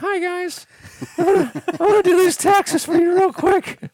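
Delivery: very high, little put-on mousy voice. Imitating a timid, boring accountant character: imitating a mousy accountant voice. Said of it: "he has a mousy voice".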